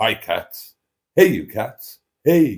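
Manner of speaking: cheery put-on voice. Reading out a viewer's greeting to the community: imitating Mustard's cheery greeting. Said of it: "greets the community with a cheery".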